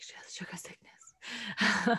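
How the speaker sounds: slow, hushed whisper. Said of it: "they're like".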